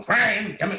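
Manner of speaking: irritable puppet dinosaur voice. Recalling how the puppet character first spoke: angry Earl voice. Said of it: "they kind of wanted him a little more angry".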